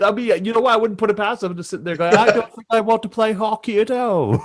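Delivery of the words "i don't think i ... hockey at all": very bad put-on New Zealand accent. Imagining a man who watched the speaker's video as a kid, bad New Zealand accent. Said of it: "That's the worst New Zealand accent".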